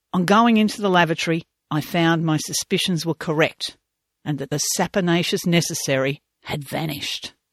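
usual speaking voice

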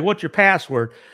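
ordinary talk

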